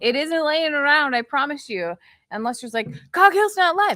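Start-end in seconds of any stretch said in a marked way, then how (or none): 3.1-4.0 mock excitement, higher and louder. Imitating the other speaker hearing a stream is not live: imitating someone excited. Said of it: "You sound like I'm excited that we're not live".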